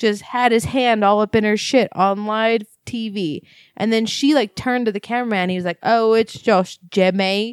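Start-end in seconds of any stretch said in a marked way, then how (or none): 5.8-7.5 slow, put-on, vague generic British accent. Imitating a cameraman on TV: put-on British accent. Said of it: "or whatever British people sound like".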